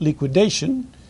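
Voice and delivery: liquidation stressed and lifted with a rise. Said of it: "and I emphasize the word".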